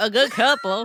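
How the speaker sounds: put-on Southern accent, loud. Repeating the phrase someone keeps telling them, in a Southern accent. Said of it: "I'm not from the South".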